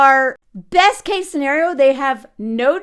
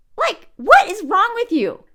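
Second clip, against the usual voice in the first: ordinary talk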